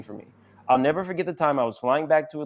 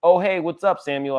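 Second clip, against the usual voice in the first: excited, star-struck, thrilled, pitched-up voice; 5 semitones higher, 4 dB louder than usual. Retelling greeting an idol on a plane: retelling a thrilled greeting. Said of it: "absolutely thrilled to speak with one".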